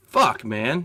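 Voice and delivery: ordinary talk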